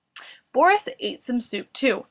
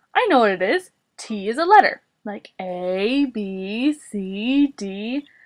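ordinary delivery

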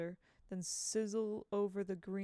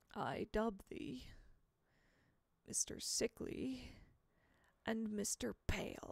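ghostly whispered voice of a dead man; 4 dB quieter than usual. Reading a story aloud, the narrator voices a character's line in a dead man's voice. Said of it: "I'm trying to do a dead man's voice".

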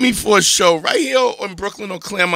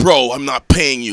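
mimicked douchey voice, lower; 5 semitones lower than usual. Retelling what a club booker said about not paying: imitating the booker's douchey voice. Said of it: "That's his voice".

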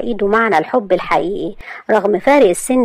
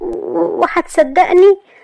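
flustered, rattled voice, very high pitched; 9 semitones higher than usual. Narrating Maria answering Asad's demand for her story, flustered. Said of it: "قالت ماريا بارتباك".

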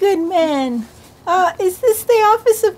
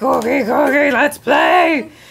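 deep, very low puppet monster voice; 7 semitones lower than usual. Retelling what Cookie Monster said during play: Cookie Monster voice. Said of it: "Cookie's like".

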